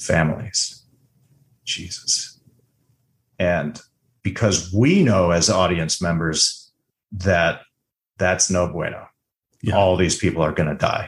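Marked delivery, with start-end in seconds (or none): 0.0-2.4 hushed voice, quieter. Retelling a scene from a show, quoting her reaction, quietly. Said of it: "she just quietly says".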